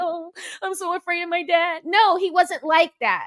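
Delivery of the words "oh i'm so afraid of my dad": put-on cowering, frightened small-child voice. Acting out a boy cowering in the corner: imitating a cowering, frightened boy. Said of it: "cowered in the corner and was like".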